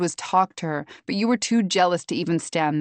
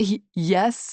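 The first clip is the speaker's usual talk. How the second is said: mockingly stuttering. Reading a story, a character mocking the narrator's stammer: mocking stutter. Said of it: "Brooke stutters mockingly".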